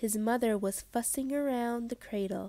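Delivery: ordinary delivery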